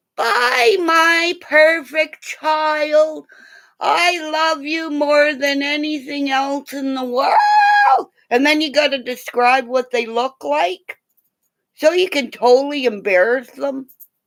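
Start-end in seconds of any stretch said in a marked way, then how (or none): 0.2-8.1 play-acted, slow, doting, embarrassingly fond calling. Showing T K what to yell at school drop-off: mock yelling out the door. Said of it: "yell out the door really loud".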